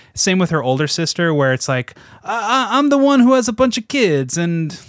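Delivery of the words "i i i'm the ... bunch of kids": clumsy, badly done Greek accent, pitched up. Imitating the older sister from the movie: terrible greek accent. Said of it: "this is a terrible Greek accent".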